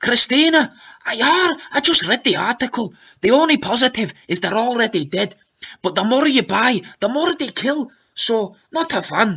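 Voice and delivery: put-on Scottish accent. Reading out Vanessa's comment to Christina, Vanessa's Scottish accent. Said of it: "in her newly perfected Scottish accent".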